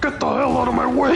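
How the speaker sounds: high, full-on bully voice, dismissive. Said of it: "he's going full on bully mode".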